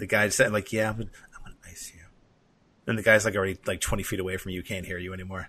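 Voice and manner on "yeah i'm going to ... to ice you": mock muttering under breath, quieter. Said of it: "say it under your breath".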